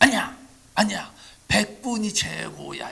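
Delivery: loud, high-pitched shouted cheer.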